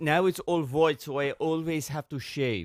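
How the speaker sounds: Persian accent impression. Speaker retells what a persian man said to them, imitating a persian accent. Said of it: "I do a very good Persian".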